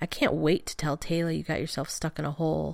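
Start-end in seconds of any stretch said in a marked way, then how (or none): none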